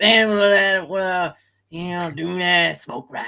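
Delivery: unhurried, deliberately slow, drawn-out speech. Retelling a scene from a show, Boomhauer speaking slowly. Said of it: "Boomhauer was speaking slowly".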